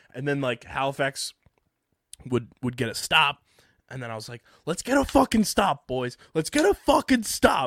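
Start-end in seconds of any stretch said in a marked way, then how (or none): 4.7-7.7 put-on very high, swooping yell. Retelling urging the team to get a stop: imitating own yelling at TV. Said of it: "yelling at the T V".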